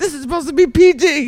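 very high, loud, shrill mock exclamation.

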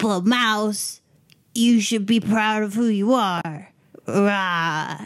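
lines ending in a long, stretched-out "rah". Retelling what Doc said about a new arm: good Doc impression. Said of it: "That is a very good Doc impression".

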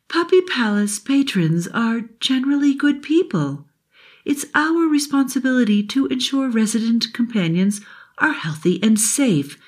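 put-on frail, patient, worn-out old grandmother voice, high and weak. Narrating Sunny the flashlight as she continues explaining, in Sunny's ancient grandmother voice. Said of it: "Although [name] appeared shiny and new, she sounded like an ancient grandmother. ... she sounded like an ancient grandmother. Her batteries were running low".

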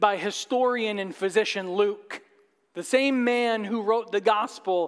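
ordinary delivery, nothing marked

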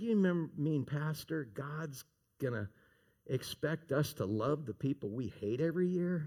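soft, sweet little put-on Texas voice. A pastor recalls a woman's question to him, imitating her sweet little texas voice. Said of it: "her sweet little Texas voice".

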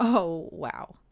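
put-on very loud, judgmental, scoffing laugh. Recounting a moment, the speaker repeats what they said out loud, retelling a judging laugh. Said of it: "with that kind of judging laugh".

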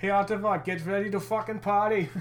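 put-on German accent. Imagining Tim Stützle addressing the Ottawa crowd, do a sweet German accent. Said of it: "in that sweet German accent".

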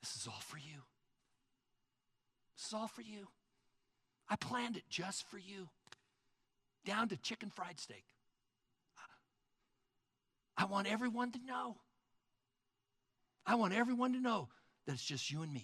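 tender, soft, affectionate, loving delivery. As a king speaking to a guest at his banquet while everyone watches, in a loving voice. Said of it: "he says to you in a loving voice".

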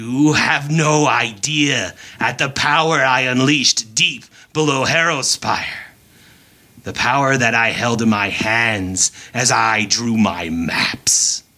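put-on ancient, old presence voice. Narrator voicing an ancient voice speaking through a floating man's body. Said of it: "an ancient voice that you recognize coming from him".

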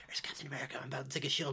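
rushed, fast, hushed, secretive whisper. Retelling how a man secretly filmed the Avengers, in a whisper. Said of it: "and he's whispering".

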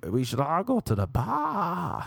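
put-on bad Boston accent, slow, sing-song, bar stretched. Retelling what they told people, in a put-on Boston accent. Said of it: "it's my Boston accent".

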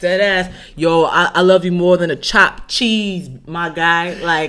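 loud mock New York accent.

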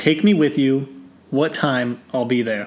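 ordinary delivery

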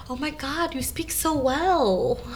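acted condescending gushing surprise. Acting out what other people say to the speaker, mock-shocked. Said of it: "the look of shock and awe".

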